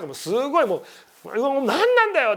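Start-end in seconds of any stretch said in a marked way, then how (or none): 1.1-2.4 mock very slow, pitched-up, stretched-out furious yell. Telling how someone got angry at silent dawn phone calls; retelling an angry outburst. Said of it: "やっぱこう怒ったんですって".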